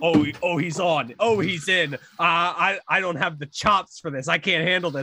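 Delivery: ordinary delivery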